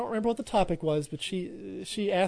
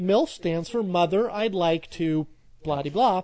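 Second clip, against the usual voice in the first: normal talking voice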